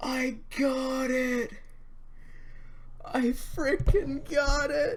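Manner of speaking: joyful, delighted, overjoyed shouting. Reacting to finally getting a rare shiny after a long hunt: joyful delighted shouting. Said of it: "the joy and delight in his voice".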